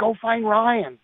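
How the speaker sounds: very high-pitched screaming. Retelling a father screaming to his mother-in-law on the phone: retelling a scream. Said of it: "he screams".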